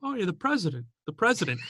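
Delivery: heavily sarcastic, swooping pitch. Speaker retelling a movie scene, doing a mock-sarcastic Denzel Washington impression. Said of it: "like, sarcastic".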